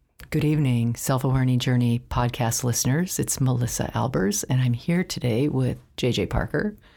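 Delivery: gentle, deliberately calming, very soothing tone. Podcast hosts greeting listeners, intentionally in a soothing, calming voice. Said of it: "we are intentionally sounding very soothing and calming".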